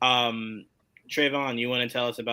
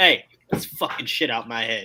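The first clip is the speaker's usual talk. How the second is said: put-on blunt, rude tone, louder; 4 dB louder than usual. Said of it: "he didn't ask nicely at all".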